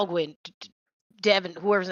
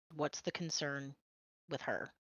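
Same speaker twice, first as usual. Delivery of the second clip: hushed, barely audible, very quiet whisper; 5 semitones lower, 14 dB quieter than usual. Asking a companion about her in character, leaning down: quiet whisper. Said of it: "whispering, like, trying to stay very quiet".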